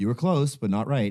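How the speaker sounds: mimicked effeminate voice. Retelling what the paint store kid said: imitating an effeminate store clerk. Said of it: "when I do the imitation of him".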